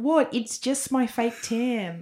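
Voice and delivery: put-on New Zealand accent. Asked by a co-speaker to repeat a woman's words in a New Zealand accent. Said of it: "Can you do a New Zealand accent?".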